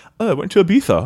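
put-on British accent. Answering how he would say it: Hugh Grant impression. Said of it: "I'm hearing Hugh Grant say it".

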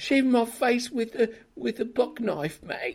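put-on botched Australian accent slipping London.

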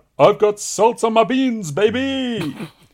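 put-on very high, loud shout, baby drawn out. Speaker recalls a six-year-old shouting while salting his food: imitating Ethan shouting. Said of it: "just shouts out".

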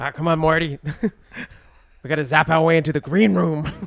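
cartoonish mad scientist voice. Two speakers act out a scene as Rick and Morty; Rick voice. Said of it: "[name] is going to go through it as Rick".

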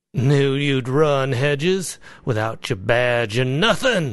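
contemptuous, scornful sneering tone. [name] speaks to Hedges as Hedges collects his possessions, sneering. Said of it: "[name] sneered at me".

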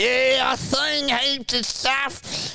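put-on slow, boozy, drunk old-timer voice. Imitating an old drunk in the pub talking about his past: imitating an old pub drunk. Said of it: "look like the old drunk in the pub and he's going".

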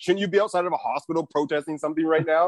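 ordinary talk

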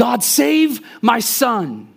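very high, loud wailing and weeping scream. Speaker recalls their mother crying out to God for them: imitating someone screaming. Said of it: "screaming so loudly it was scary".

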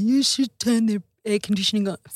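plain, matter-of-fact delivery. Quoting a husband who comes in: Gordo voice. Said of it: "sorry, Gordo, to use that voice".

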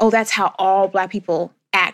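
ordinary talk

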